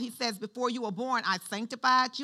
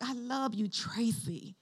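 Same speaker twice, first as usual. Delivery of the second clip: mock-tender, affectionate, much quieter and slower; 8 dB quieter than usual. Retelling how someone told her he loved her, retelling a loving voice. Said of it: "when you talk to somebody you love, he was like".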